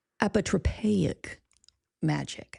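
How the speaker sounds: apotropaic said deliberately, slowly, syllable by syllable. Showing how to pronounce a word: saying it slowly. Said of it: "Let me say it slow".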